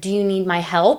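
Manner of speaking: normal talking voice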